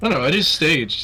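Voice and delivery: normal talking voice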